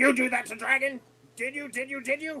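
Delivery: very high-pitched screaming character voice. Playing a character charging at wizards in a game: screaming in character. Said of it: "I'm, like, screaming".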